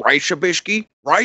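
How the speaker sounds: teasing put-on character voice. Retelling how someone does a Pimp Monk impression: Pimp Monk impression. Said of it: "his is funny 'cause he's like".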